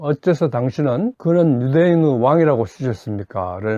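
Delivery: plain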